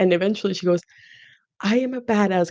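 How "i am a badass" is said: cracking, unsteady voice breaking mid-line. Retelling how she finally repeated the line: imitating a voice breaking. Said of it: "with her voice breaking".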